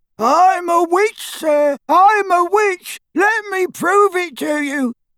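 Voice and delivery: very high, squeaking little voice. A man mimics a woman who asked him to plead her case, squeaky impersonation. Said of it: "he said in a squeaky impersonation".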